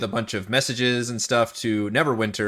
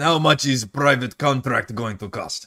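slow, put-on Russian accent. Asking in character how much a private contract costs: russian accent. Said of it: "I'm doing your accent".

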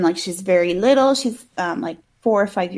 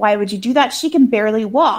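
put-on angry outburst. Retelling a movie scene where the mom reacts to the doctor: imitating an angry mother. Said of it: "all pissed off".

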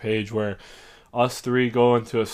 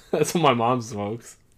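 plain

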